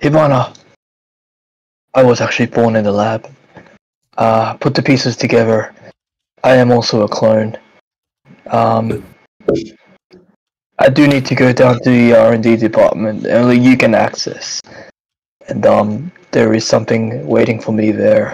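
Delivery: hushed, secretive half-whisper. Player in character, leaning close to Hibana so Elliot won't hear: half-whispering. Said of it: "I'm whispering".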